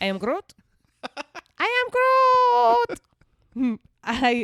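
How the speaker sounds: put-on very high, slow baby voice, "am" stretched out. Chatting about Groot, doing a baby Groot voice. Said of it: "I'm decent at the baby Groot".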